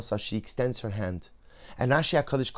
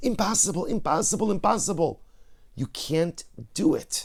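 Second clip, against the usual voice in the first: half-yelled, pitched-up mild yell; 5 semitones higher than usual. Voicing the little inner voice once it has grown from whisper, yelling. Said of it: "and then it's yelling".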